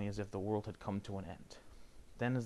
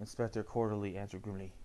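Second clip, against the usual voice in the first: ordinary delivery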